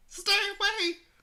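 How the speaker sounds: put-on tiny girlish voice, very high. In an improvised battle in an abandoned warehouse, voicing the little girl: little girl voice. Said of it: "I'll voice little girl".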